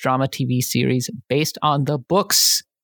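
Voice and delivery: "the books" stressed, with rising end.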